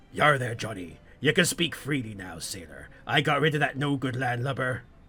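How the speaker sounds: quiet, gruff put-on mutter. Pretending to be the sleeping captain, the player speaks to the Ern: gruff mutter imitating the captain. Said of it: "then mutter gruffly to the Ern".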